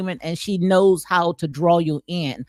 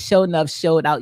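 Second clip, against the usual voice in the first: ordinary talk, nothing marked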